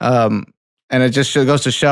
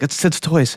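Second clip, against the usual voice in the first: soft whispered aside under the breath; 4 semitones higher than usual. Retelling a remark made when the toys came on screen: retelling a whisper. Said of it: "I whispered to Natalie".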